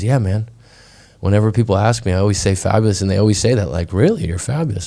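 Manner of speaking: normal talking voice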